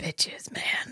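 breathy, whispery zombie voice. Speaker retelling a scene where M answers R, M's whispery zombie voice. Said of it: "It's like whispery zombie voice".

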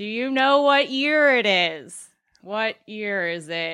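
speaking very loudly. Speaker shows how they question elderly patients, yelling at them. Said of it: "use your geriatrics voice".

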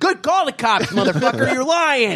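mock, very high, furious screaming. Recounting a fight with a man who threatened to call police, retelling screaming at a man. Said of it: "I'm screaming at him".

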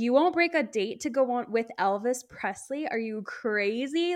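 put-on angry voice, outburst-like. Retelling how a caller reacted when a date was refused: imitating someone angry. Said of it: "he just got so mad at her".

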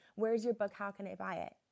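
ordinary talk, nothing marked

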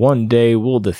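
plain

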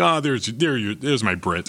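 plain

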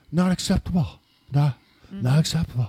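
serious, somber voice, out of breath. Imitating how a line was delivered, breathless somber Donald Trump voice. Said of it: "his somber, so somber, like breathless voice where he goes".

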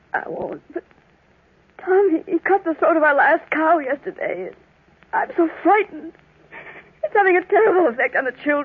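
weeping, tearful, crying speech. Gertrude answers a man comforting her about Tommy, crying. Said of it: "don't cry".

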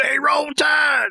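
raspy put-on impression voice. Retelling meeting Rooker and his reply to them, in a raspy Rooker impression. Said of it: "his lovely raspy voice".

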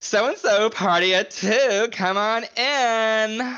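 put-on very slow, high Valley Girl voice, "in" stretched. Describing an actress's film role, imitating her in a Valley Girl voice. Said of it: "she's still a little bit Valley Girl".

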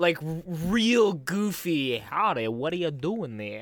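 very goofy, weird put-on New York accent. Retelling a movie scene, quoting the kid's line in a weird New York accent. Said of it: "that was like a weird New York accent".

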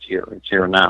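soft quiet voice. Retelling telling a partner in bed that it's here: retelling own words in a softer voice. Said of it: "I'm talking in a softer voice".

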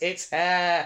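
high, exasperated, fed-up retort. Recapping an episode, quoting a character's reply as she walks away, mock-exasperated. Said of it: "she just sort of says in an exasperated voice".

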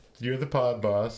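ordinary delivery

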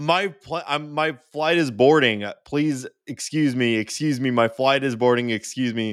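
play-acted, pushy, screaming put-on man's voice. Retelling a man pushing through an airport line: imitating a man screaming. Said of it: "he goes by screaming".

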